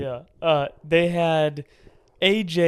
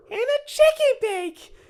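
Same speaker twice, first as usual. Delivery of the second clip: put-on very high, slow kid voice. Retelling a kid's words on a facility tour: Elmo-like kid voice. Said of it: "You do his voice way too well".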